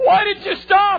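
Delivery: high, loud, slow, humiliated crying voice.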